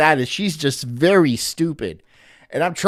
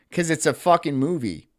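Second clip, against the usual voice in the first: ordinary talk, nothing marked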